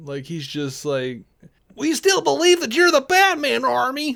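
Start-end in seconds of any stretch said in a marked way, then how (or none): 1.8-4.1 very high, grating, annoying announcer-style narrator voice. Retelling a celebrity news video's narration: imitating an abrasive voiceover narrator. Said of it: "so abrasive and so annoying".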